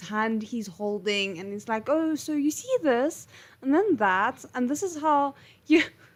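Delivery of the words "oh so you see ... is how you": mock patronizing voice, as if to small child. Retelling how a character explains things: talking to him like a child. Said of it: "talking to him like it's a child".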